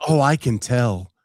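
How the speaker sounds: ordinary talk, nothing marked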